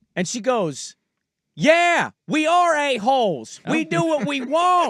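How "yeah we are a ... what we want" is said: put-on woman's scream, higher pitch. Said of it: "She's just screaming at me".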